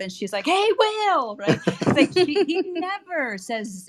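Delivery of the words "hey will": genuinely enthusiastic, pitched-up voice. Retelling how she greets will when she talks to him, imitating a real enthusiastic voice. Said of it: "with this like real enthusiastic voice".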